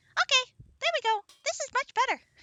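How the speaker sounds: very high, very loud squealing pixie voice. Retrying after saying the voice was not high enough for the pixie: high pixie voice. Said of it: "my voice is not getting high enough for the pixie".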